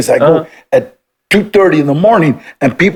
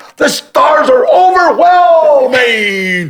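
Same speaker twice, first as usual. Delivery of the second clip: put-on yell, higher; 10 semitones higher than usual. Retelling standing up at the front of a boat at night: retelling own scream. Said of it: "I stood up and I screamed".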